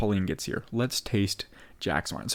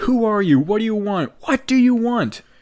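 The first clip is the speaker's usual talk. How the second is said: very high, shrill, loud, confrontational yelling; 12 semitones higher, 8 dB louder than usual. Retelling a character confronting a guest: imitating someone yelling. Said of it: "yelling at David Nathan Bright".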